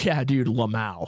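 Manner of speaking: tongue-in-cheek, ironic dude-speak. Imitating how Will ironically says it: imitating Will saying it ironically. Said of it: "Will does this thing where he just ironically says Lamau".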